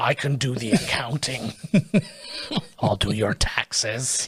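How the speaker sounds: low, deep character voice sunk into the chest. Chatting about a show they love, speaker does a Kevin voice. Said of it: "doing a Kevin impression".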